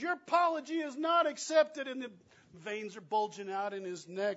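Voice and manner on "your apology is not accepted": very high, loud, shrieking, furious angry scream. Retelling a roadside confrontation, an angry man's line: imitating a man screaming. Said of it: "this guy screams".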